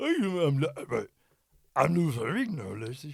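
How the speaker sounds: slow, drawn-out, swooping voice. Showing the others how Lou Ferrigno talks: imitating Lou Ferrigno. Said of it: "it's like this, and he's like".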